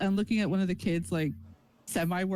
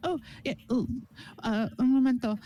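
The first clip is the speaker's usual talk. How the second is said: put-on flustered voice, higher pitch; 3 semitones higher than usual. Retelling how a woman reacted when invited to share pastries, imitating someone flustered. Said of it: "She she flusters like".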